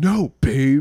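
very loud, angry male snapping. Retelling a man who was mad at his girlfriend: mock-angry. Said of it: "this dude was like mad at his girlfriend".

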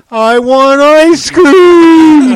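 mock very high, very loud, slow child's cry. Recalling how the listener said it, half standing: imitating a little kid crying. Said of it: "you said it in a almost like a little kid cry".

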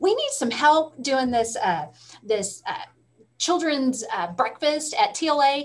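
put-on Southern accent with halting fillers. Retelling a director's request for help with a breakfast: Jana Knezik's Southern accent. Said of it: "she has this great Southern accent".

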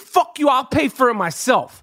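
plain

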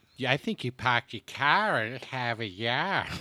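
Boston-accented speech. Showing off an accent for the others, in a Boston accent. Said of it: "someone can do the Boston accent right".

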